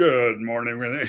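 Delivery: put-on, low morning radio DJ patter. Retelling goofing around with a friend doing radio DJ voices: radio DJ voice. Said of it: "doing our little radio D J voices".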